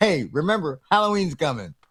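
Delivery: ordinary talk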